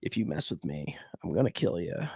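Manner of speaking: very low, quiet, flatly factual delivery. Showing how he would sit there and talk in promos, imitating a very low voice. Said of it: "very, very low".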